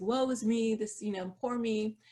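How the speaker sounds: usual speaking voice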